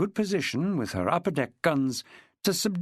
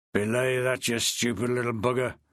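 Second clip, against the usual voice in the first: quiet, growling voice; 4 semitones lower than usual. A voice from behind a man's back speaks up, in a quiet growl. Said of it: "a quiet voice growled".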